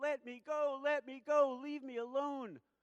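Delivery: put-on very high yell, crying out through sobs. Recounting being carried off as a ten-year-old, acting out the yell: retelling a sobbing yell. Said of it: "I burst out sobbing, and I yelled out".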